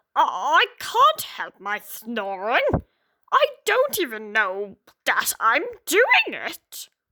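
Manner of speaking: muttering, mumbled pug dog character voice. Reading a story, the pug answers the dog complaining about his snoring, muttered pug voice. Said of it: "I'm a pug. / he replied. / He spoke in a bit of a muttered tone, / and a bit of spit flew out of his mouth".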